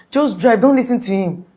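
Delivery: urgent, desperate, loud screamed shout. Speaker retelling what a woman kept shouting at him, retelling a shout. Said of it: "she kept shouting".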